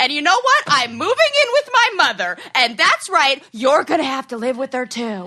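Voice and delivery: exasperated, very frustrated, fed-up delivery. Acting out an imagined wife fed up with the tombstone: frustrated wife voice. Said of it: "some very frustrated wife who's like".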